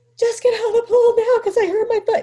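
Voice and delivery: tearful, very high-pitched shouting. Retelling the moment right after breaking a foot in the pool: acting out crying. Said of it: "Now I'm crying".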